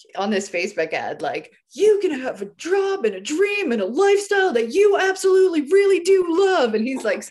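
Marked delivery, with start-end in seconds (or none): 1.8-6.8 very high, shrill, hyped-up screaming pitch. Retelling a Facebook ad in which Tony Robbins pitches a dream job: imitating Tony Robbins screaming. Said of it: "screaming at me".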